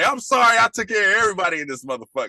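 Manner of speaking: put-on, high-pitched angry outburst rant. Retelling a father going off on everybody: imitating an angry outburst.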